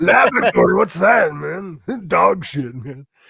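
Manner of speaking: rough, creaky, stoner-sounding voice. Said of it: "I can do [name] and [name]".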